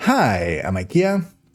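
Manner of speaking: odd, off-kilter rhythm through the line. Retaking a fast-talking video intro, delivered with a weird cadence. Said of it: "that was a weird cadence there".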